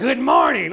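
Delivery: booming, very loud, mean-sounding man voice. Imitating a grandmother who burnt out her vocal cords smoking: imitating grandmother's man voice. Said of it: "She'd wake me up in the morning like".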